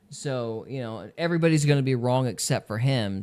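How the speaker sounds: ordinary talk, nothing marked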